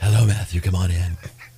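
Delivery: breathy, genteel, elegant voice. Imagining an elegant woman in a golden gown: breathy Lady B voice. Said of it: "With a breathy voice".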